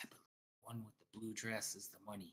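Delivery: very quiet, half-whispered stage whisper aside. Acting out a wagon seller half-whispering to an employee, imitating his half-whisper. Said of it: "he kind of like hear him like whisper to him".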